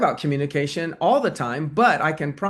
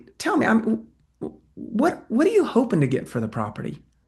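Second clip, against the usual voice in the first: stammering, hesitant, sincerely curious, swooping pitch; 6 semitones higher than usual. Demonstrating how to ask a question, curious with hesitant stuttering. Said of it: "I stuttered very, very intentionally because that helps it come across with more sincerity... I'm looking to demonstrate curiosity".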